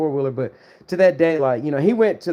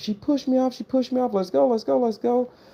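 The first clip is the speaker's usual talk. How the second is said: high, frantic, play-acted screaming over and over; 8 semitones higher than usual. Retelling an injured friend's words after a crash: imitating someone screaming. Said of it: "He's screaming".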